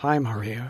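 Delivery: very soft, faint, barely audible voice. Reading a story aloud, a sick girl greets a visitor: very soft voice. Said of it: "in a voice so soft it's hard to hear".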